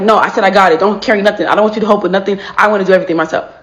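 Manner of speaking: put-on slightly aggressive, irritated, insistent tone. Speaker acting out someone refusing help with the grocery bags, mock slightly aggressive. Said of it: "slightly aggressive or gets a little mad".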